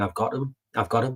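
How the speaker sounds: normal talking voice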